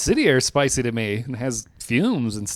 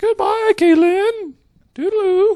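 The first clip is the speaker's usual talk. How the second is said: put-on old lady voice, much higher pitch; 7 dB louder than usual. Teasing Kaylin after Kaylin's voice cracked, saying goodbye in a Mrs. Doubtfire voice. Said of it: "Found Missus Doubtfire's".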